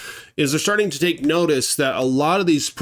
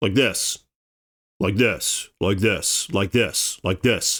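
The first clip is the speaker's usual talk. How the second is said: low, slow, deep voice pushed from the gut; 7 semitones lower than usual. Giving advice on how to talk, showing the listener: talking from the stomach. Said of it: "Talk from your stomach a little bit more".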